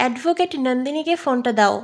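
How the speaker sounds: ordinary delivery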